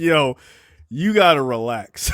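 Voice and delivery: ordinary talk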